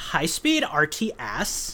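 put-on whispered, breathy California Valley Girl accent. Speaker announces it first, then says it: Valley Girl accent. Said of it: "I will just be doing this in a typical Valley Girl California accent".

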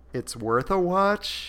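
high, doubtful, hedging noncommittal tone. Saying something on YouTube is worth a watch, doubtful noncommittal tone. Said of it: "I say that in a very maybe tone".

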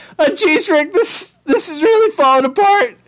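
very high, cartoonish character voice. Playing Morty worrying that the bit is falling apart: Morty voice. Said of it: "It totally is, Morty".

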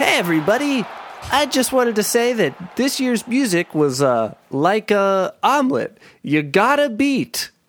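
performer's big, projected stage voice. Caller on speakerphone addressing everybody, switching to a stage voice. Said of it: "I better use my stage voice".

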